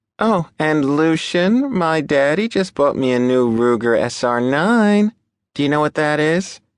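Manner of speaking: honeyed, sugary tone. Rose adds a remark to Lucian in a syrupy sweet voice. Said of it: "In a syrupy sweet voice".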